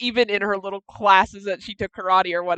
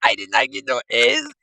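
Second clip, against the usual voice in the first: quick, pitched-up, fake Mexican accent; 5 semitones higher than usual. Reacting to a speaker, repeat his line back in a Mexican accent. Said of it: "he went to a Mexican accent for one second".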